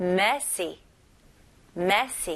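messy with the first syllable punched hard. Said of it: "첫 음절에 강세를 주시면 돼요".

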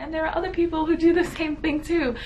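high, excited gush of realization.

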